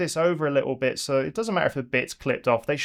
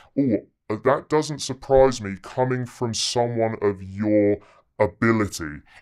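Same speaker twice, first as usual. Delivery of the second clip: put-on, low, dominant academic-sounding voice; 6 semitones lower than usual. Demonstrating how to open an academic conversation, in a lowered voice. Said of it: "So I'll lower my voice".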